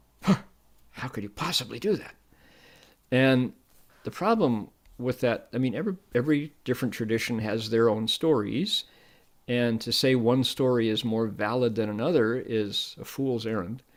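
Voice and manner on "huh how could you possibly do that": mock sneering preacher voice, scornful and disdainful. Retelling what street preachers said about the practice: imitating a scornful preacher. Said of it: "delivered with a lot of scorn".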